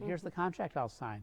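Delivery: ordinary delivery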